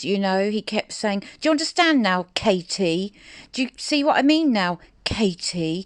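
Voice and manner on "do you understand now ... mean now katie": put-on condescending, swooping, patronising, almost intimidating tone. Retelling a live streamer snapping at a viewer who corrected him: imitating Armchair Detective's patronising tone. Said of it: "flew at her in that awful tone of his".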